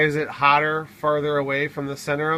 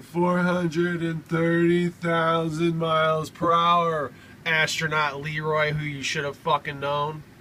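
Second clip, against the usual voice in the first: dry, mocking sarcasm in a slow drawl. Mocking her reading off a script: imitating a sarcastic delivery. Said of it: "sarcastically saying".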